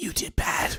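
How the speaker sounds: ghostly, eerie, breathy whisper. Game master voicing a cold wind of death speaking to a player, whispering. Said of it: "as it whispers".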